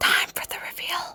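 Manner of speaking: hushed whisper. Announcing the reveal of a doll outfit: whispering. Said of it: "I don't know why I'm whispering".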